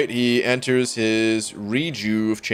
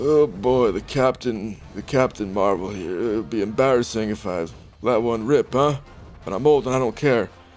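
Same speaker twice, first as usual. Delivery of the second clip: terrible, clumsy, put-on old man voice. Playing arena, the speaker tries a voice for a game character: terrible character impression. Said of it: "This is a terrible impression".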